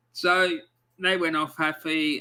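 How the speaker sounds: normal talking voice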